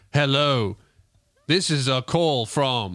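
very slow, menacing, ominous robot voice. Retelling a debt collector robocall: imitating a terrifying robot voice. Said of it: "this fucking terrifying robot voice".

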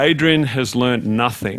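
dry, wry, mocking and sarcastic. Retelling a lecturer's remark at a graduation: imitating a sarcastic, wry remark. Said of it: "in a very sarcastic and wry manner".

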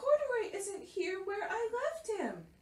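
very high, exclaimed outburst. A girl in a laundromat calls out to her mother, exclaiming. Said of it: "she exclaimed".

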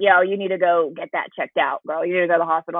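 put-on raspy man's voice. Retelling a phone call where Reno urges a hospital visit: imitating Reno's raspy voice. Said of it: "has got this raspy voice".

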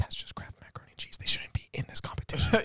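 put-on stern, serious, hushed old-lady whisper. Retelling an old lady whispering to other old ladies: imitating an old lady whispering. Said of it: "whispering in their ear".

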